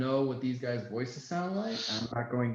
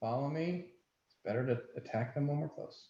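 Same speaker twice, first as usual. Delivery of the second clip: muttered under the breath; 3 semitones higher, 3 dB quieter than usual. Speaking in character to the group while approaching two people: said under the breath. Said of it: "I kinda say under my breath".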